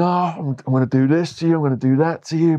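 acted screaming. Describing a young man with a gun threatening Darren G on camera, mock-screaming threats. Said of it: "he's just screaming about Darren G".

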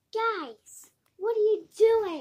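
very loud, high, belted-out monster voice. Introducing a character and asked to do her voice, Nightmare Foxy voice. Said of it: "And this is her voice".

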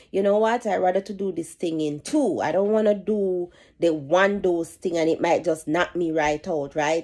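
ordinary talk

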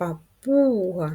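slow папуга, stressed У drawn out. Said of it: "Визначимо наголос".

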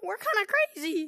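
high voice cracking partway through. A player cheering on the team during a match, voice cracking. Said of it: "voice crack there".

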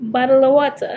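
fake, put-on British accent attempt. Taking turns saying words in British accents: put-on British accent. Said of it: "we are currently doing British accents".

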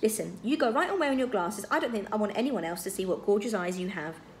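ordinary delivery

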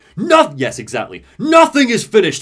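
booming, very loud, very high shout. Retelling a game scene where a character drowns his enemy: shouting. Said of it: "Booker shouts".

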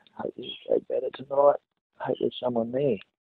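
hushed low whisper. Talking so as not to wake someone sleeping, whispering. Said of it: "So everyone's whispering".

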